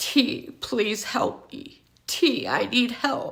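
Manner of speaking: near-whispered, slow, breathy sobbing voice. Retelling how a crying man on the ground begged for help: imitating someone crying and pleading. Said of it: "he's crying".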